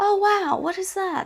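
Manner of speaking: astonished, surprised voice pitched very high. Demonstrating a quick breath for belting, sounding surprised. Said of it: "as if you're surprised".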